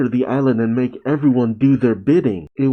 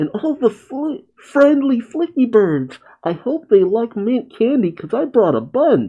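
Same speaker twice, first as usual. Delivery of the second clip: put-on nasal boy voice, higher pitch; 10 semitones higher than usual. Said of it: "didn't Tails have, like, a nasally voice?".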